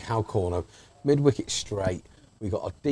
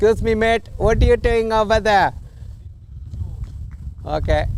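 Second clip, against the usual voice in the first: put-on Welsh accent, voice pitched very high; 13 semitones higher, 4 dB louder than usual. Calling out to a mate over there, welsh accent. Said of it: "Why are you speaking in a Welsh accent?".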